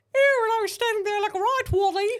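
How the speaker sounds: very high, very loud, fake English accent. Told she's getting more English, speaker keeps going in a put-on English accent. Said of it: "you're progressively getting more English".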